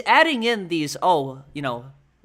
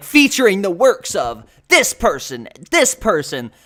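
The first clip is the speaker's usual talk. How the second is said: loud, big, epic intro-style announcing voice; 3 semitones higher, 7 dB louder than usual. Quoting a video's intro that is meant to be epic: James Somerton epic intro voice. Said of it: "the intro where he goes, like".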